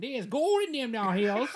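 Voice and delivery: put-on Southern accent, very high, loud prospector voice. After someone says they sound like a prospector, speaker plays along: old Southern prospector voice. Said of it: "old Southern prospector".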